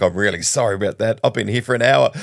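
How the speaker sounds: ordinary delivery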